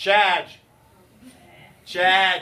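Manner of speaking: loud New England accent on charge. Explaining electron charge to students, saying the word: new england accent. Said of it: "say it like you're from New England".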